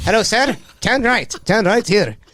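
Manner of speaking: put-on Indian accent, put on. Retelling how the phone's voice assistant now talks: imitating an Indian man's accent. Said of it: "I made her an Indian man".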